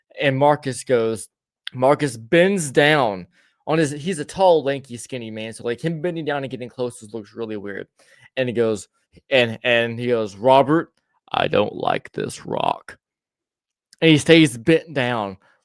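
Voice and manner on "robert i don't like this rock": rough, slow, creaky, drawn-out voice. Retelling how Marcus bent down by the campfire rock: imitating Marcus. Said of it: "I do it no fucking justice".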